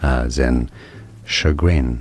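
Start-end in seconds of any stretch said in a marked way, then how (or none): 1.3-2.0 American stress on second syllable of chagrin. Showing how the word sounds in American English: American stress on second syllable of chagrin. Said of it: "Now in American English".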